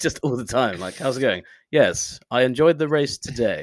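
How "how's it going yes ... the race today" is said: sultry voiceover-artist delivery. Imitating a friend's voiceover voice in everyday chat: imitating a sultry voiceover voice. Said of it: "You should start talking like this in real life".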